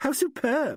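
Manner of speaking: put-on, mocking, fancy affected intonation. Narrator reads Alan mimicking another speaker's new inflection; imitating someone's inflection. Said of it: "Imitated Alan. The new inflection".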